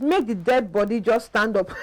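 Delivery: plain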